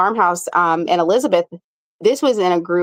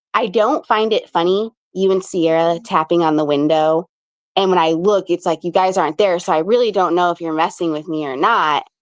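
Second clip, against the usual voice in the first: ordinary talk, nothing marked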